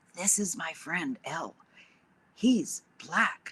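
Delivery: slow, hushed, secretive, proud stage whisper. Retelling how a boy introduced his friend at a party: imitating a child half-whispering. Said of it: "he lowered his voice and he started whispering".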